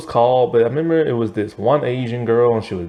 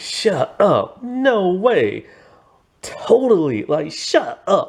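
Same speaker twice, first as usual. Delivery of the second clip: put-on Valley girl voice; 8 semitones higher than usual. Describing a movie character on the phone, imitating her stereotypical Valley girl voice. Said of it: "She talks like a very stereotypical Valley girl".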